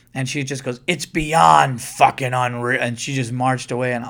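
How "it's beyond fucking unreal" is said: ranting wrestling promo style voice. Retelling an angry traveler's reply at the airport: imitating a WWE promo voice. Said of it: "she went W W E promo voice on me".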